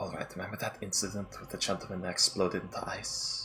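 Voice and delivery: quiet, close, confidential whisper. A character leans close so as not to cause panic: whispering. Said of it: "so I'm gonna whisper this to you".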